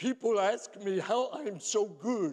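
borrowed voice, slightly cracking. Retelling what was said at a prayer breakfast: imitating Oscar Tshiebwe. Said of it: "my imitation of Oscar Tshiebwe".

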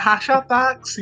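put-on woman's shout. Retelling how an older lady at a bus stop shouted at tourists: imitating a woman shouting. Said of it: "começou a gritar".

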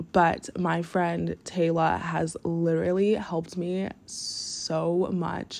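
moved, emotional, each word very slowly drawn out. Giving a shout-out to a friend, getting emotional. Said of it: "I don't even know why I'm getting, like, emotional".

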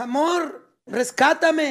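far-off, loud, high shout. Retelling his partner calling to him from far off, retelling a shout from afar. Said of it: "Me gritó mi vieja".

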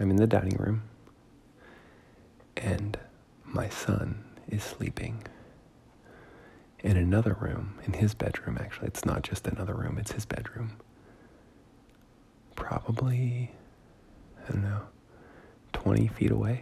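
speaking quietly and softly, hushed. Talking quietly from the dining room while a son sleeps nearby: speaking quietly and softly. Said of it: "Sorry I have to be so quiet and soft-spoken".

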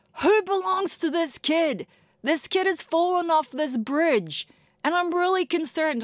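loud, high-pitched holler. The speaker's kid fell off a playset bridge; quoting another mum, imitating a mum yelling. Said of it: "some mum yelling out".

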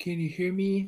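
high, bodiless, disembodied voice. Retelling the hint voice that came into the headset, imitating a disembodied voice. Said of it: "disembodied voice".

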